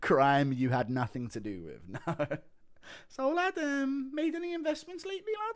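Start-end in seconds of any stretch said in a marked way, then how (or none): 3.1-5.6 very high, squeaky, needling, prying voice. Doing a requested impression of Till asking leading incriminating questions, impression of Till. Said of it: "impression of Till".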